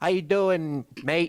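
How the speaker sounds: decent put-on Australian accent. Asked to let others hear the accent they can do: Australian accent. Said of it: "I can do like a uh, maybe like a good like uh, Australian accent".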